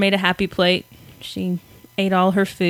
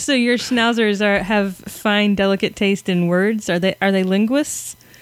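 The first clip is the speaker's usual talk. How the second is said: normal talking voice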